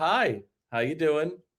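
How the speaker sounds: put-on robotic retail clerk voice. Mocking how retail workers greet customers, imitating a robotic retail clerk. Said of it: "And it's this robotic thing".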